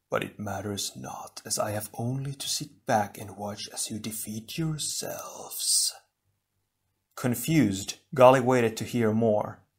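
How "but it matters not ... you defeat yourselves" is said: smooth, soft, silky delivery. A voice mocking them from the shadows answers Onua, silky. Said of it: "the voice responded silkily".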